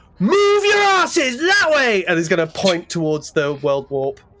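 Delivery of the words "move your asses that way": very high, full-volume bellowing shout. Playing a character warning crowds in a burning city: shouting as loud as possible. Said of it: "shout as loud as he can".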